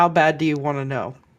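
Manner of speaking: very hushed, leaning-in half-whisper. Leaning in close to ask another character a question: half-whisper. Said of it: "I'm gonna whisper to Blair".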